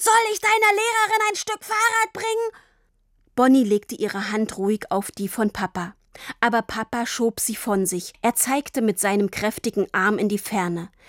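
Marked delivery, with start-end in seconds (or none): 0.0-2.6 very high, full-throated, roaring bellow. Dad keeps shouting across the whole street, roaring. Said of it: "brüllte er weiter".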